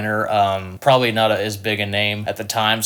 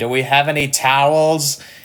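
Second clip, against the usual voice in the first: high, loud mock scream. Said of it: "he was screaming down at the band".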